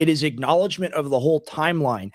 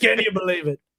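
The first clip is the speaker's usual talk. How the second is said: put-on angry voice, fast, loud and higher; 6 semitones higher than usual. Doing Trump angry, speaking fast and loud over a helicopter: Trump screaming over helicopter noise. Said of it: "screaming over the helicopter propeller voice".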